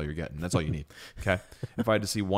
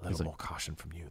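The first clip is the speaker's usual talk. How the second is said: put-on breathy voice, quieter; 2 semitones lower, 10 dB quieter than usual. Quoting a mysterious movie character's lines: imitating a breathy voice. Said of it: "He's got that real breathy voice".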